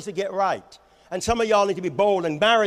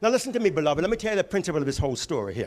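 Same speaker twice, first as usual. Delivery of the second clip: ordinary talk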